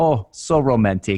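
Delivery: put-on Vietnamese accent. Retelling dropping to one knee, the speaker quotes the man holding the phone in Vietnamese accent. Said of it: "in his Vietnamese accent".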